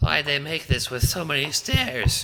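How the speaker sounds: very high, breathless, wheezy whine. Reading a story aloud, voicing a small goon climbing stairs: wheezing.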